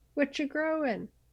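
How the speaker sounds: high yell, projected as if over a distance. Voicing Big Sis calling over to the farm people: yelling over to the farmers. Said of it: "Big Sis is just gonna yell over".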